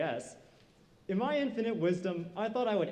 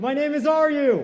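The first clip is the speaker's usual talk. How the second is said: very loud, high, overconfident blurt, drawn out; 7 semitones higher, 12 dB louder than usual. Retelling blurting out a name on stage: imitating own blurted-out overconfident line. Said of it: "I blurted out".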